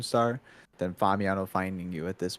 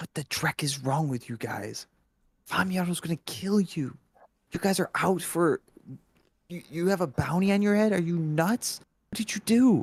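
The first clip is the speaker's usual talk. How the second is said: hushed whisper, higher; 9 semitones higher than usual. Voicing a caller named Ice on a speakerphone call: whispering. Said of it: "he's, like, whispering".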